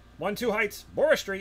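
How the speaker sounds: shrill put-on impersonation, very high and loud. Repeating a street address the way he said it, imitating his voice. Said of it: "I'm gonna repeat that in his voice".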